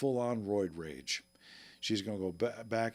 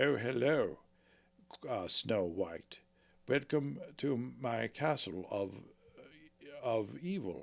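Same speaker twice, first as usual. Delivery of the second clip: slow, grand, stately put-on regal queen accent; 2 semitones higher than usual. Improvising a scene as the queen, in a regal queen voice. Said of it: "regal and stuff".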